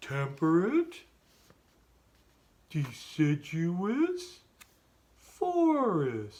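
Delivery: swooping cartoon voice with "forest" drawn out. Leading the class in repeating a phrase: Patrick Star voice. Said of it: "We're gonna say it like, uh, Patrick Starr".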